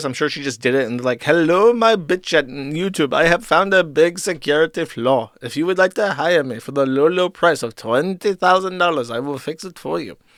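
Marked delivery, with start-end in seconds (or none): 1.2-10.2 put-on Indian accent. Acting out an email from a scammer: put-on indian accent. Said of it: "My Indian accent's getting very good".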